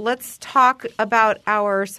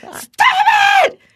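yelling, higher and louder; 8 dB louder than usual. Retelling yelling at a crying toddler in the car: retelling her own yell. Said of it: "I yelled at Elby".

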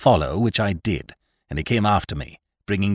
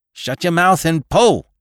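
high, loud, bellowed roar; 9 semitones higher, 5 dB louder than usual. The captain answers a panting man's fearful outburst, roaring. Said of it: "roared the captain".

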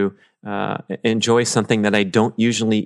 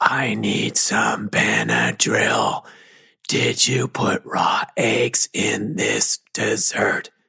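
imitated whisper. Retelling a friend's allergic reaction to dessert: imitating Rob whispering. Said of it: "but he whispers".

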